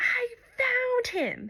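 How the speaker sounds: put-on very high, squealing, swooping burst of joy. Retelling a woman's FaceTime call, mimicking her excited scream. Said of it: "she's screaming like".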